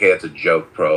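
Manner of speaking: dry, sarcastic throwaway jab. Retelling a remark to someone who told a joke, retelling a sarcastic quip. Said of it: "I sarcastically said".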